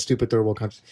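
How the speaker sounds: usual speaking voice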